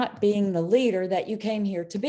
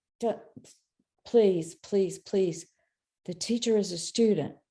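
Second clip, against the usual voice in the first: gentle, hushed, very soft begging tone. Retelling being recognized in a mediumship class: retelling own soft pleading. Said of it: "And I would say that very softly".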